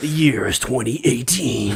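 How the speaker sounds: dramatic film trailer narrator voice. Opening the show with his co-hosts, announcing the year in a movie trailer voice. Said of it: "Movie trailer voice guy is here".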